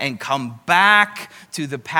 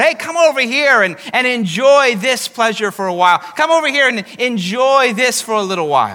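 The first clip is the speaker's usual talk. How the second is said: carnival barker voice, higher pitched; 7 semitones higher, 6 dB louder than usual. Describing a voice calling from the side of the road: carnival barker voice. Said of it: "a kind of a carnival voice".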